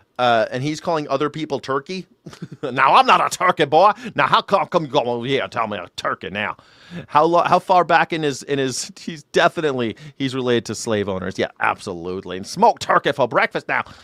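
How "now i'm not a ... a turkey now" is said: indignant barnyard rooster cartoon character voice. Imitating a cartoon rooster who calls other people turkey, Foghorn Leghorn voice. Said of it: "He's like a high pitched voice, Foghorn Leghorn".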